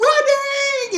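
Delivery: loud, high-pitched screaming.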